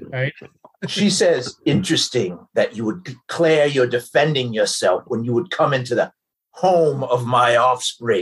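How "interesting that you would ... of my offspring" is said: deep, scornful, menacing ancient dragon voice. Game master voices a mother answering those who slew her offspring; booming dragon mother voice.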